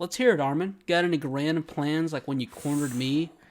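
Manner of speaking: ordinary talk, nothing marked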